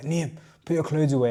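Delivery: put-on scolding, shouting voice, held back. Retelling a dad's order to put the clothes away: imitating dad shouting. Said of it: "My dad used to shout at me".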